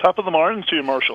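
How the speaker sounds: put-on Irish accent. Greeting the other speaker on Saint Patrick's Day: put-on Irish accent. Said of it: "Whenever I start doing an Irish".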